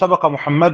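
plain

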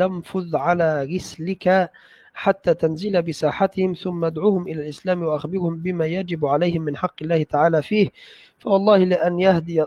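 ordinary talk, nothing marked

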